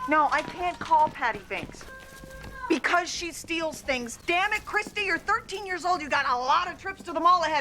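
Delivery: scolding, berating tone. Berating a thirteen-year-old girl on the phone: berating a girl on the phone. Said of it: "berating a thirteen-year-old girl on the phone".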